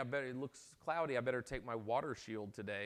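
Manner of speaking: plain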